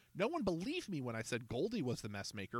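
ordinary delivery, nothing marked

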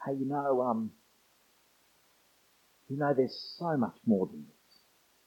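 hushed voice, almost a half-whisper. Retelling what a visitor said after the service: imitating someone almost half-whispering. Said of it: "almost in a whisper".

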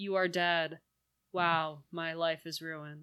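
acted calm, low, soft, flat, monotonous voice. Describing a film actor finding his dead lover, imitating actor's monotone calm voice. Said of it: "monotonous, calm, almost lover voice".

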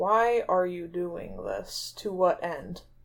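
slow character delivery. In a role-play scene, Cypress responds to another character, speaking slowly. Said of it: "Cypress just says slowly".

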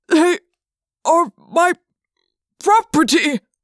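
high, loud gasp forcing words out. Reading a man's protest to the elephant narrator, gasping. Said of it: "he gasped".

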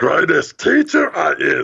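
raspy, creaky, rasping put-on character voice. Speakers take turns quoting a line in a character's voice: raspy character voice. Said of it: "does he have like a rasp in his voice?".

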